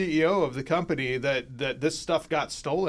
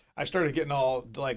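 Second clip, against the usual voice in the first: ordinary talk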